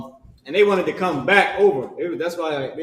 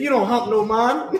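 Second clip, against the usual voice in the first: put-on Jamaican accent, higher pitch; 7 semitones higher than usual. Retelling a TikTok guy's joke about hiring a Jamaican: imitating a Jamaican accent. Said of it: "the way he said it sounded like hump a man".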